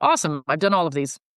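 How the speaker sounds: normal talking voice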